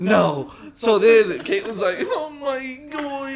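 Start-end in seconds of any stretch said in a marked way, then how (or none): 2.0-3.3 put-on weepy, tearful, pitched-up crying voice. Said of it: "crying, crying".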